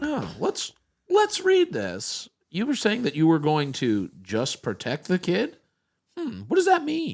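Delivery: aggressive, grilling tone like a TV sting host. Questioning a gorilla about a kid in its cage: Chris Hansen voice. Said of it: "Chris Hansen".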